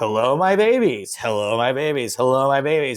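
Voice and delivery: mocking, teasing, relentless repetition, acted out. Retelling sound guys repeating the greeting to tease: mocking imitation. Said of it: "making fun of me for saying".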